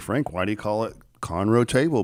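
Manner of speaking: usual speaking voice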